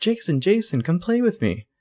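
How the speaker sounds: put-on high childlike voice calling. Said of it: "a child's voice calling from upstairs".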